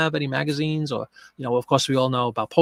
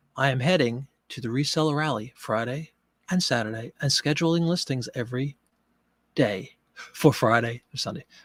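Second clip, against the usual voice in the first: deliberately slower pace, quieter; 4 dB quieter than usual. On a show, after catching themselves talking too quickly, slowing down on purpose. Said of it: "Let me slow down".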